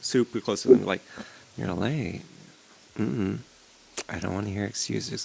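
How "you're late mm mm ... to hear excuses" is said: flirty, playful, seductive, teasing. Showing a voice actor how to seduce someone up close: playful seductive. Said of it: "that type of, like, playfulness".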